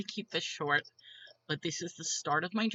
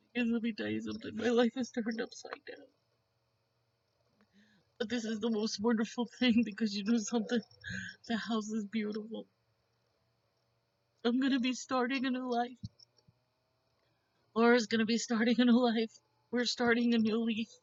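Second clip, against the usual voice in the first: tearful crying voice, higher; 6 semitones higher than usual. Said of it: "I'm not supposed to be crying".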